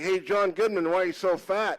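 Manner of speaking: ordinary talk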